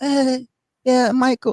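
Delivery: tiny, very high-pitched voice. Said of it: "his little".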